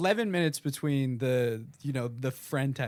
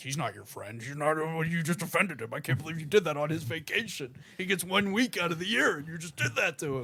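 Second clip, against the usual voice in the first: very aggressive, harsh, berating voice; 2 semitones higher than usual. Acting out a scolding inner voice: aggressive inner voice. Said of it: "Your inner voice sounds very aggressive".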